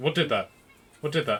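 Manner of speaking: put-on startled voice. Voicing a character who looks around after being poked. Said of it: "he looks around, he's like".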